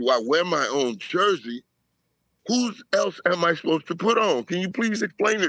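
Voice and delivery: ordinary talk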